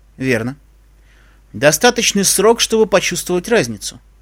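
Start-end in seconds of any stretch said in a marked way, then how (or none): none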